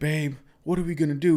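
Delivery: acted, frantic, sobbing, high-pitched bawling. Acting out a husband who has just lost his job; imitating someone crying. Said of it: "he starts like bawling his eyes out".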